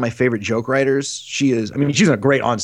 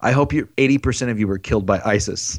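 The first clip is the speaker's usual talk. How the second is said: quiet, hushed voice, slower; 2 semitones lower than usual. Retelling what he said after the audience turned on him, real quiet. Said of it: "he gets real quiet, and then he just leans into the mic and says".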